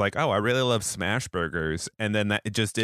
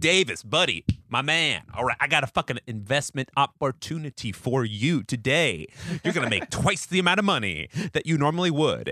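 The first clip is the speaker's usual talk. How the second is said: mock shady sales pitch voice, higher; 4 semitones higher than usual. Retelling how someone pitched an investment to davis: imitating a shady investment pitch. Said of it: "this imitation".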